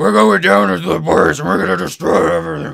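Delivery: very loud, guttural, rough barking bellow. Imitating an actor's very angry general from a film: deep guttural Dennis Quaid voice. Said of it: "As deep a guttural as he can".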